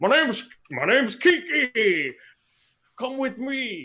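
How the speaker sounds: very high, loud, wobbling, otherworldly slime voice. Narrating a slime appearing before the players, it speaks: warbly, strange Kiki voice. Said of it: "in this like warbly kind of strange voice".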